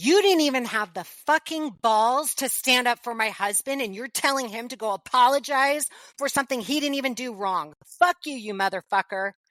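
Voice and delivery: play-acted furious, enraged, cursing scream. Retelling the moment she finally snapped during the phone fight: retelling her own angry scream. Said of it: "And I scream back".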